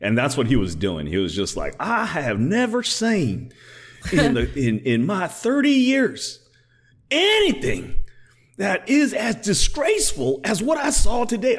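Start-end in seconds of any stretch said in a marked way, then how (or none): 1.8-11.6 put-on angry Southern drawl, pitched higher. Retelling Lindsey Graham's angry tirade: imitating Lindsey Graham's Southern drawl. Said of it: "he can turn on that Southern drawl".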